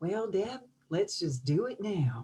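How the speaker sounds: put-on charming, gentle, light Southern accent. Retelling what a peer coach said on their first call: Denise's Southern accent. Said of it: "with her beautiful little Southern accent".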